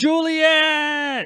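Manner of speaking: very high, loud, long, piercing scream. A character creating a diversion fires twice in the air, then screaming a name. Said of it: "and then he screams".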